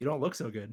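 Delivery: close whispered delivery. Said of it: "whisper in his, in, in his ear".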